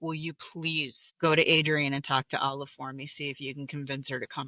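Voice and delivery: normal talking voice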